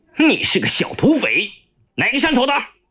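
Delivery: sharp bark. The chief of staff grabs Yaoliu by the collar: barked. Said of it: "突然抓住幺六的衣领喝道".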